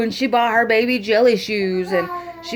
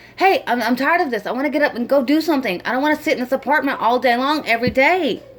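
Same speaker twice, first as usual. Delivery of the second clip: put-on exasperated, fed-up, frustrated tone; 2 semitones higher than usual. Speaker acts out what they hear in the voice, mimicking a frustrated voice. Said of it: "you can hear the frustration in her voice or in his voice".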